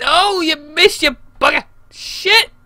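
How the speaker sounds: frustrated, exasperated voice.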